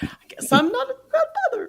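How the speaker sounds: very high, forced, fake tearful cracking voice. Imitating a mother who fakes a tearful tone: imitating a fake voice break. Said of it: "she makes her voice break like this".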